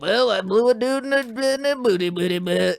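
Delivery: shamefaced, soft-spoken voice. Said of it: "you always do it in that voice".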